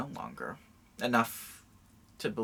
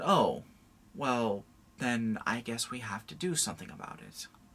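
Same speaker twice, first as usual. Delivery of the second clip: imitated sheepish tone. Retelling how a superintendent answered the speaker's mother: imitating a sheepish reply. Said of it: "very sheepishly said".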